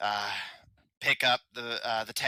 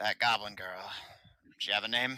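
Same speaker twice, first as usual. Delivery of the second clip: quiet, low, hushed voice; 3 dB quieter than usual. A goblin looks up to the player, still speaking Goblick, in a low voice. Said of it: "in a low voice".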